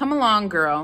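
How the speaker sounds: loud, sharply snapped delivery. Madam stops and orders the girl to come along: snapping an order. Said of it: "she snapped".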